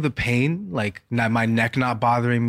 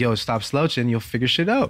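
ordinary delivery

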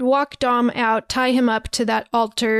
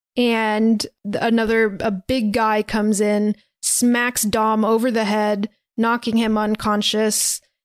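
usual speaking voice

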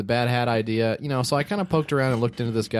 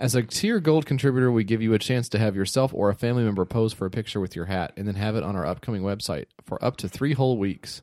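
ordinary talk

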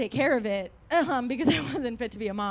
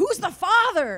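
mock heated, loud, high-pitched screaming; 7 semitones higher, 5 dB louder than usual. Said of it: "We're screaming".

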